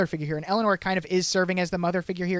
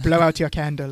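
bad put-on British accent, lower in pitch; 3 semitones lower than usual. Quoting a line from the episode: Chuck's bad British accent. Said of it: "he is doing an impression of a bad British accent".

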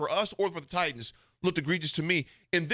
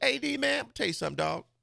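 put-on Southern accent, pitched up; 6 semitones higher than usual. Retelling a former Nebraska cornerback's answer to your question, imitating Tyrone's Southern accent. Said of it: "That Southern accent".

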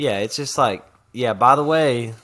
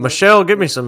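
loud, raised delivery; 6 semitones higher, 6 dB louder than usual. Trying an Obama voice after saying voices are hard: Obama voice. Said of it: "I wanna try to do an Obama voice".

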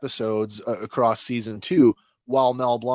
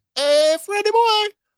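very high cartoon voice, pitch way up, calling out; 5 dB louder than usual. Doing Barney Rubble's other voice: Barney Rubble's higher voice. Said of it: "he had a much higher".

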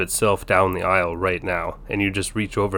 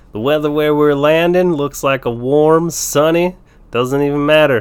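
put-on loud, raised Colorado stoner-dude accent; 8 semitones higher, 7 dB louder than usual. Giving the group the weather where they're landing, in a Colorado stoner accent. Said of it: "do that with like a Colorado stoner accent".

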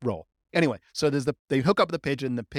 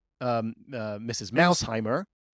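ordinary delivery

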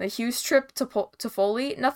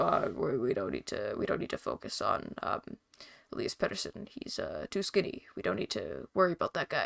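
terrible, breathy put-on voice, whispered; 7 semitones lower, 11 dB quieter than usual. Imitating what the coach might have said, terrible Darryl Sutter impression. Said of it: "That was a, a terrible impression".

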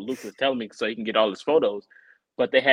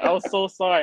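put-on laughing speech, pitched higher; 7 semitones higher than usual. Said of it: "And she's laughing".

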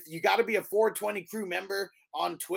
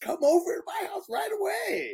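very high, put-on disguised voice. Recapping a 90s story, the speaker mimics kidnappers disguising their voices: disguised high-pitched voice. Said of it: "like all this high pitch".

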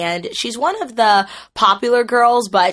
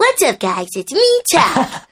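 put-on high, swooping kids' cartoon character voice; 6 semitones higher than usual. Redoing a Nick Jr. show voice from age six: The Wonder Pets character voice. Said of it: "I did the voice of Turtle Talk in The Wonder Pets when I was like 6 years old... I can still do it".

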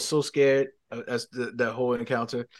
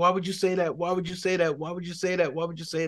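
put-on tearful sob-talk, high, looping, repeated; 6 semitones higher than usual. Retelling a woman who starts crying at what he said: imitating her crying. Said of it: "she starts crying she's like".

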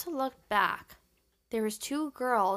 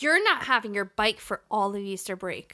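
put-on furious voice, louder; 5 dB louder than usual. Retelling what mom said after a C on a test: imitating furious mom. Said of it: "my mom was furious with me".

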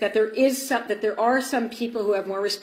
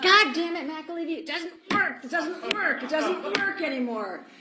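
high, frantic, unraveling put-on screaming; 7 semitones higher, 3 dB quieter than usual. Retelling a former staffer's phone call: imitating someone screaming. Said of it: "starts screaming at me".

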